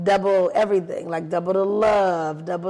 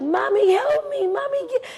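put-on very high, stretched-out, drawn-out child's scream. Retelling a child's cries during a tooth pulling: imitating a child screaming. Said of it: "he was just screaming like".

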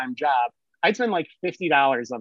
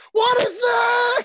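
very high, loud, stretched bloody-murder scream; 5 dB louder than usual. Retelling how a man reacted to finding a bagel in the toilet, retelling a scream. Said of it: "And he's screaming".

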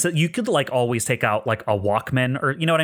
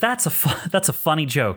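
put-on light chuckle; 3 semitones higher than usual. Retelling a game scene, voicing a character's reply to an accusation: retelling a small laugh. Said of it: "He laughs a little bit and goes".

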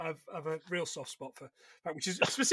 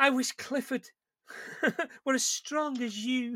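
small, timid, pitched-up mousy voice; 5 semitones higher, 4 dB quieter than usual. Retelling a tv scene, quoting a woman's line: little mousy voice. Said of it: "this little mousy voice".

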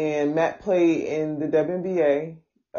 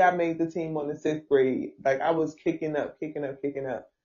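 plain

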